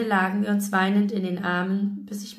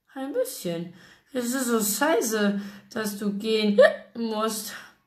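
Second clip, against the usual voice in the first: put-on mournful, sad, drunken slurred words. Narrator reads Penny's line as she looks up from the floor: sad slurred speech. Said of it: "lallte traurig".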